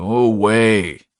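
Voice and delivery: growled, with the word "away" drawn out. Narrator voicing a man hidden under the covers with her, growling. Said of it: "he growled".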